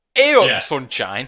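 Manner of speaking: put-on northern English accent. Teasing a panel member by mimicking a northerner: mock northern english accent. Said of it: "a southerner trying to mimic a northerner".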